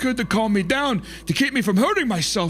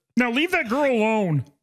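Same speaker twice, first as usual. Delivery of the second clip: rough, loose cartoon frog puppet voice. Asked to repeat a voice, saying a line in Kermit the Frog voice. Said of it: "Kind of like Kermit, kind of".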